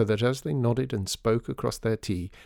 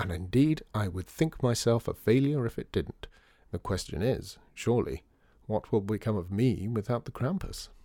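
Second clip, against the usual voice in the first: plain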